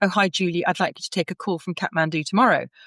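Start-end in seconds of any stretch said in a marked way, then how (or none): none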